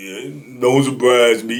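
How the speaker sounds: put-on deep, old voice. Retelling what a cellmate said on hearing the news: imitating Jerry's deep old voice. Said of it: "deep old voice, old junkie Jerry".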